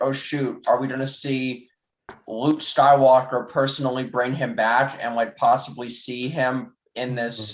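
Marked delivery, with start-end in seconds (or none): none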